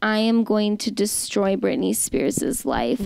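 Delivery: ordinary delivery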